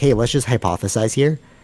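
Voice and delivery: put-on dry, knowing sarcasm, played as sincere. Retelling what a man said, imitating him sounding sarcastic. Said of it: "he's saying it like sarcastically".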